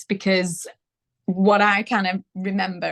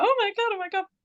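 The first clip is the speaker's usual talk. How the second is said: high-pitched, shocked exclamation. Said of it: "And I was like".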